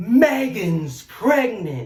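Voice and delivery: put-on booming, loud, lion-like roar. Retelling a voice she heard while her husband slept, like a roaring lion. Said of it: "Like like a roaring lion".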